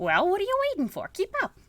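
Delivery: loud, high, swooping, goofy put-on character voice. Playing a game, the speaker voices the character leading the lawyer: stupid character voice. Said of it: "good game for me to do stupid voices".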